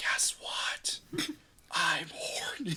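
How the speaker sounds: drawn-out, loud, slow stage whisper. Retelling what was said to Ariane in bed: imitating a loud whisper. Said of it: "I whisper really loudly to Ariane".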